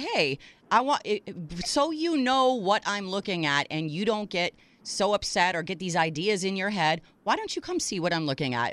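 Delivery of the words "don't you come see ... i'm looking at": ordinary talk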